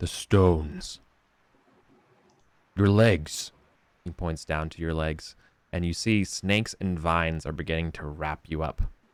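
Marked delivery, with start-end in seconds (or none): 0.0-3.5 huge, deep, gravelly voice, slow. Answering a player who asks where to find him, in a big deep gravelly voice. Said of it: "real big, deep, gravelly voice that I can only barely emulate".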